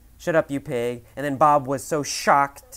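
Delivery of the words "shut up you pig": normal talking voice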